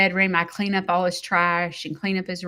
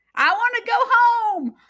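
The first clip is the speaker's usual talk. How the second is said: put-on shrill, very high, loud crying yell; 5 dB louder than usual. Retelling what someone said during the night: imitating someone yelling. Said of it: "out yelling".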